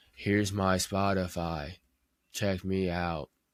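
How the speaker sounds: flat, dull monotone, put-on. Describing how posting links sounds, in a Ben Stein monotone. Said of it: "a monotone motherfucker, just saying".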